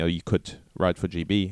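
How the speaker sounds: ordinary talk, nothing marked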